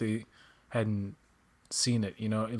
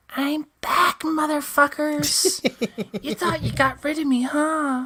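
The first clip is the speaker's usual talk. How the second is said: squeaky cartoon voice, raised, slow and drawn out; 5 dB louder than usual. Imagining Orko coming back in a later episode, in the Orko voice. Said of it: "You do it like perfect".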